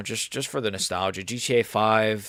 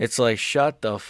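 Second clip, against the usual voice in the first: plain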